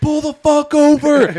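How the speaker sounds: mock shrill cop voice, high, drawn-out barking yell. Retelling being pulled over, quoting the man pulling him over, imitating a cop yelling. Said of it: "He's yelling on this thing".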